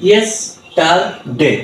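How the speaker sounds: yesterday broken into separate syllables, yes-ter-day. Teaching to read english three-syllable words: yesterday split into syllables. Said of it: "এমন ভাবে ভাগ করব".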